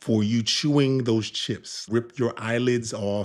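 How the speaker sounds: mock anger spoken through gritted teeth. Showing how to tell someone off over chewing chips, in mock gritted-teeth anger. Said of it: "gritting your teeth and saying it like".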